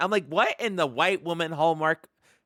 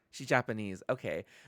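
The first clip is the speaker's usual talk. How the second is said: normal talking voice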